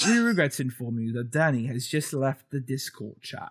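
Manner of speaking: British-accented, phone assistant-style voice. Announce that Danny has left the Discord chat, in a British Siri voice. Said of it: "my British Siri voice".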